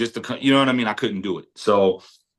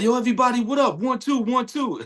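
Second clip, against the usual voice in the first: put-on very high, teasing, joking kid voice. Retelling how the son walks around impersonating him: imitating son impersonating the speaker. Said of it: "he'll walk around the house impersonating me".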